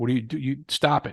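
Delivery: normal talking voice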